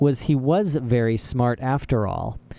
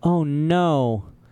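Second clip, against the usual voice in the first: timid, small, frightened voice, drawn out; 3 semitones higher than usual. Reading a story aloud, voicing Klaus in a small, scared voice. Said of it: "in a small, scared voice".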